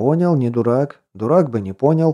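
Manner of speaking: ordinary delivery, nothing marked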